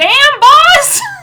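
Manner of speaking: very high, loud, tiny, squeaky, piping voice. Voicing a small character cheering from the back: little voice of Eggs. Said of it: "you hear the little voice of Eggs".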